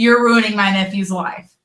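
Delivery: ordinary talk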